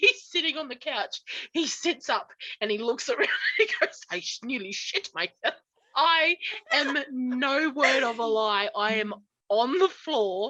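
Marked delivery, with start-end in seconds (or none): 4.1-5.5 put-on German-accented dad voice, lower and quieter. Retelling what their dad said after sitting up on the couch, imitating a German dad. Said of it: "he's very German".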